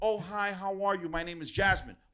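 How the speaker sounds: put-on polite, proper-sounding voice. Mocking a politician by imitating how she really talks. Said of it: "this is how she really talks".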